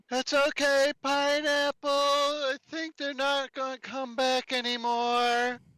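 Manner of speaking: loud yelled voice, reassuring in tone. A player's character, realizing the fight is over, yells to pineapple. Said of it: "I'll just yell".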